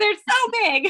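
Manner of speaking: high, loud, excited and alarmed exclaiming.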